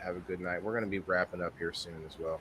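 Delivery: hushed whisper. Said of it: "I thought your volume went down".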